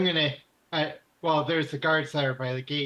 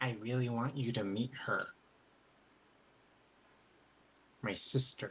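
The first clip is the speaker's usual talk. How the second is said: clearly articulated, hushed half-whisper; 4 semitones lower, 9 dB quieter than usual. Kneecap, having motioned the player to kneel, speaks to them in a clear half-whisper. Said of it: "he whispers to you in the clearest speech you've ever heard".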